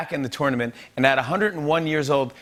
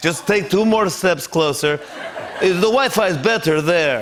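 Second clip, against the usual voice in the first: English spoken in a put-on Russian accent; 4 dB louder than usual. Playing Vladimir Putin setting up a meeting with Biden over a tank, Vladimir Putin voice with a Russian accent. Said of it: "[ Russian accent ]".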